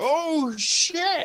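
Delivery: mock loud exclaiming voice. Retelling what dad yelled in the crowd: imitating dad's loud exclamation. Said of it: "Just hear my father".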